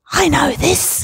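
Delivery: very high, gleeful, triumphant stage whisper. Retelling a daughter's remark during a church service: imitating a triumphant stage whisper. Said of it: "in a triumphant stage whisper".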